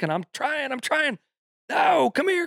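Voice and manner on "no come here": very high-pitched yell. Retelling calling the chasing dog back: retelling screaming at a dog. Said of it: "I'm screaming at him".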